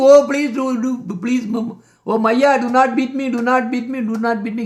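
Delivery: mock tearful crying and begging, over and over. Retelling how the child is bound and fears the stick: imitating Krishna begging and crying. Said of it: "And he's begging".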